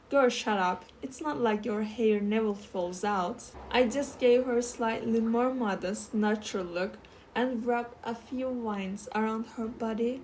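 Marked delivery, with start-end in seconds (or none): none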